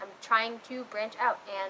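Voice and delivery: normal talking voice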